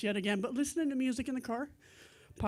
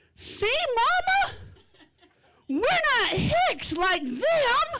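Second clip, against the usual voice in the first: put-on very high, very loud, shrill little-kid voice; 8 dB louder than usual. Retelling a store visit, the parent imitates her 4-year-old in a loud 4-year-old voice. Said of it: "in her loudest outside 4-year-old voice says".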